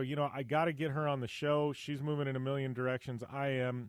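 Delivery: ordinary talk, nothing marked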